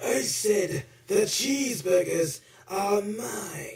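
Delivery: put-on cartoon robot voice. Playing Megatron in a skit about cheeseburgers: Megatron voice. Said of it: "pretending to be the voice of Megatron".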